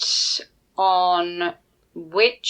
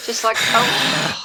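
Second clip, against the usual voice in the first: slow, drawn-out loud sigh. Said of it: "How loud a sigh are we talking?".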